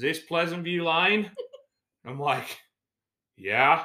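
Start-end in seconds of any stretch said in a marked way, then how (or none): 0.0-1.3 put-on thick Australian accent, laid on heavy, pitched up. Retelling what a stranger asked when the speaker walked over, in a heavy Australian accent. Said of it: "he's in a heavy Australian accent".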